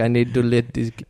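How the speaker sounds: mock, put-on Indian accent. Riffing on a story of stealing cards from 7-eleven, imitating an indian accent. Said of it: "I said it like that is because the photo of the owner was Indian".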